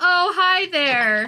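forced, high, fake-polite customer-service voice. Voicing a shopkeeper who greets the party: forced customer service politeness. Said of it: "She gives the customer service smile".

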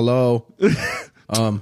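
put-on half-hearted, listless, limp tone. Describing a woman who no longer makes an effort, imitating a half-hearted hello. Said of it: "She's not even trying anymore. She's like".

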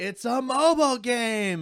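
high, slow, mock grand announcer voice.

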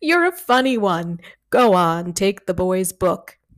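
amused delivery, chuckling through the words. A big man who just burst out laughing answers the narrator: amused, laughing. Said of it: "He's just a big, clumsy bear of a man. / He's strong enough to crunch my bones in two if he had a mind. But I think he's trying to be nice. He's just a big, clumsy bear of a man. / he says".

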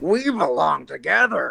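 put-on drunk creature voice. Taking his turn in a round of voices with friends, drunk Yoda impression. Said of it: "That's drunk Yoda".

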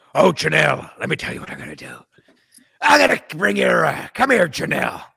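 rough, creaky, coaxing, swooping man's voice. Asked to tell how he would broach it, imitating his voice. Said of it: "Tell me in his voice how that would go".

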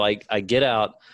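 ordinary talk

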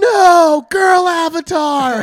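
shrill, very high sobbing scream at full volume. Recounting standing up during a movie on mushrooms and screaming: retelling a crying scream. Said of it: "and I just screamed".

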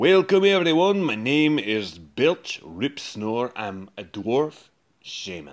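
put-on Scottish accent. Player introducing a dwarf shaman character with little preparation, Scottish accent. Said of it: "some YouTube clips of the Scottish accent".

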